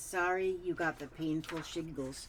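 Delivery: normal talking voice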